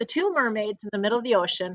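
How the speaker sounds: plain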